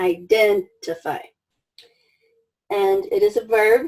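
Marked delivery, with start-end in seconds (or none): 0.0-1.2 identify, with stress on second syllable -den-. Vocabulary lesson on word stress: stress on 'den' in identify. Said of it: "Strong syllable, second, second syllable".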